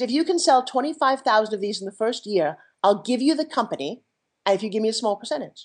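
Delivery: ordinary delivery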